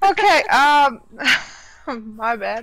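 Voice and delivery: slow, giggling, can't stop laughing through the words. Apologizing while starting to talk, laughing while talking. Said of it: "can't stop laughing now".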